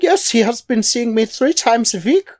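put-on German accent. A character claiming to see a therapist answers as Dr. Schwartz, Dr. Schwartz German accent. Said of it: "talking in a German accent".

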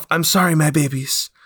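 whispering to himself. He crouches by the goo and speaks to himself: whisper. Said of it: "whispers to himself".

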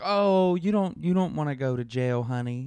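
put-on American Southern accent, honey-style. Retelling what a collections agent said on the phone: imitating a southern accent. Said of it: "she had, like, a Southern accent".

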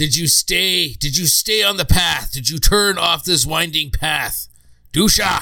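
yelling barbarian character voice. A barbarian calls to a companion through a microphone, giant barbarian voice screaming. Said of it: "giant barbarian voice comes screaming".

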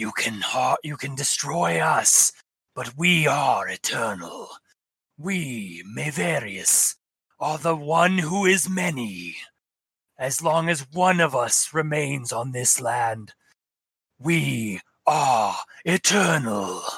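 harsh, raspy, hissing voice. Game master voices the attacker that just hit the player, in a raspy, hissing voice. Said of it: "in this, like, raspy, hissing voice".

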